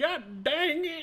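put-on very high-pitched, exclaiming old man voice. Picking up on someone imagined stuck in a pipe, do an Old Man McGucket voice. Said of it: "Sounds like old man McGucket from Gravity Falls".

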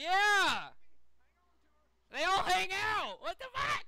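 loud, high-pitched yelling. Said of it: "Stop yelling".

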